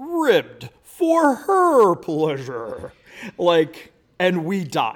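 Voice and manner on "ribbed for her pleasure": drawn-out, high-pitched put-on voice. Retelling a dad's joke in a quiet restroom: Don Pardo impression. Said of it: "in his best, like, Don Pardo, like, impersonation".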